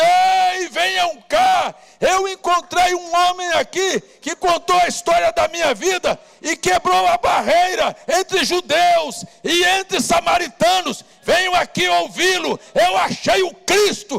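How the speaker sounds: very high, loud calling shout. Retelling how the woman went through the city gate: imitating a woman shouting. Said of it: "ir gritando".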